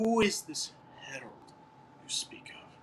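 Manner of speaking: whispered creature voice. Voicing the creature again in a different voice: new NPC creature voice. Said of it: "He's going to be".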